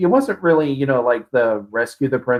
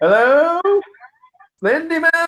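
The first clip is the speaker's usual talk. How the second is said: cautious, wary, very high-pitched calling. Imagining Markiplier stopping to look around: imitating Markiplier calling out warily. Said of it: "pausing to stop, look around, and going".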